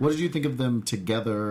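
normal talking voice

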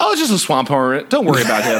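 ordinary talk

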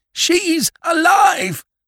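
very loud, very high, shrill scream of terror. Reading the captain suddenly yelling out aboard the ship, a terrified yell. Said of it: "such a sound of comprehension and terror in a man's voice".

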